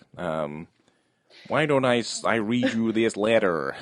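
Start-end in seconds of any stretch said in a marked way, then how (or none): 1.5-3.8 startling, stilted, robotic automated computer voice. Imitating an actor's line delivery: imitating startling robotic speech. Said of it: "startling and robotic".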